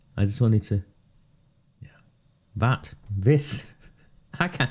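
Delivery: words broken up by helpless laughter. Trying to speak while unable to get up, laughing while talking. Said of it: "I'm laughing 'cause I can't get up".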